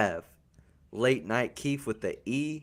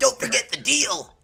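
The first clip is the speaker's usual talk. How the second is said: pumped-up, high, loud voice. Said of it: "You sound like Crazy Taxi".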